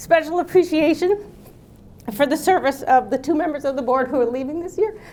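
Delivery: tearful, choked-up crying, voice catching, pitched high. Speaker at a board meeting thanking two departing members, choked up, crying. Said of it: "I don't know why I'm crying".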